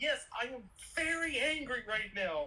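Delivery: slow, giggly angry line, schoolboy giggles. Imitating Doom smiling under his mask while attacking: imitating Doom giggling while angry. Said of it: "giggling like a school kid".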